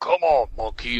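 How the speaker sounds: mocking imitation of a yell. Recounting how another man mimicked the speaker's own yell back at him: imitating someone mimicking my yell. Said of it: "like imitating me".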